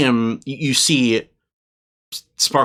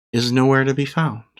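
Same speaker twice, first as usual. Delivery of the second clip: usual speaking voice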